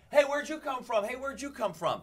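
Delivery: put-on very high, loud shouting. Retelling walking into the crowd to find who traveled farthest: retelling own shouting. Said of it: "just started shouting".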